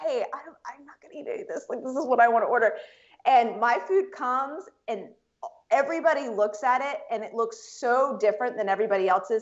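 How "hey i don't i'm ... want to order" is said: acted whisper, faster and higher. Retelling what you said to the waiter at the executives' table: retelling a whisper. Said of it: "I'm like whispering to the the waiter".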